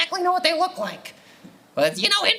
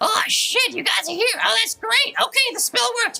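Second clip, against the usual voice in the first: small, high, piping tiny imp voice; 5 semitones higher than usual. Describing a scene to the players, voicing a small flying imp in a small imp voice. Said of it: "you hear a small voice pipe up".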